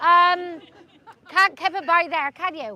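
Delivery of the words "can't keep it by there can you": accent from Cornwall. Joking after adding Cornwall to a list: put-on Cornish accent. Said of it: "That's my Cornish accent".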